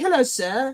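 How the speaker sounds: put-on French accent and manner. Acting out greeting someone at a cheap bar: mock French voice.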